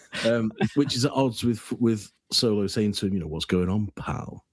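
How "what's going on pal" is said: put-on sneering sarcastic voice. Quoting a line from a film scene: imitating Han Solo's sneering sarcasm. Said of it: "In that real sort of sneering, sarcastic way".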